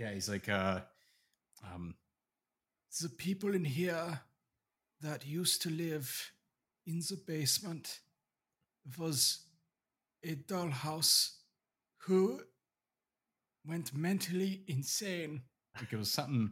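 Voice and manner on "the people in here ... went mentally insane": put-on German accent, pitched higher and spoken slower. Trying to recall the voice mid-conversation, doing a Werner Herzog impression. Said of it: "You sounded like German".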